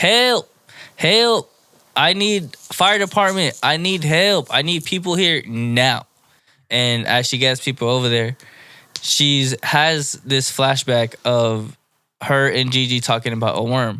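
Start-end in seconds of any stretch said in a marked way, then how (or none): 0.0-6.1 put-on high-pitched yelling. Retelling a scene where a character sets a fire: imitating someone yelling for help.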